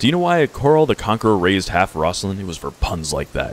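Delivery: normal talking voice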